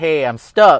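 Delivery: loud, slow yelling. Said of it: "like, yell".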